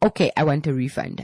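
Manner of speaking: plain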